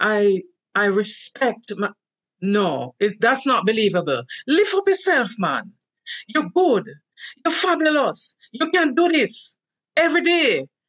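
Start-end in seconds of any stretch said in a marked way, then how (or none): 4.5-10.6 pitched-up Jamaican Patois voice. Speaker gives an affirmation in Jamaican nation language; imitating mother's Jamaican Patois. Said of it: "I'm imitating my mother's voice and my grandmother's voice".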